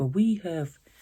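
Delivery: put-on, mildly annoyed, somewhat mad tone. Retelling an argument with him; imitating him, kind of mad. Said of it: "I didn't mean to make a voice for him".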